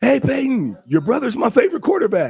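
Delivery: acted eager, excited yell, high and swooping. Retelling what he yelled at his favorite quarterback's brother, retelling a yell. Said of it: "And I yelled out".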